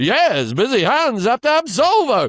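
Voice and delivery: put-on old-time sing-song, drawn-out advertising voice cadence. Remembering an old Solvol advert, the speaker mimics it in a Solvol ad voice. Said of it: "that was an advertising uh, uh, rhythm of speech".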